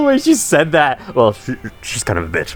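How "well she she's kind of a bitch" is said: put-on whisper, much lower pitch, quieter. A speaker repeats a game character's line about someone, imitating her whisper. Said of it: "I love the whispering".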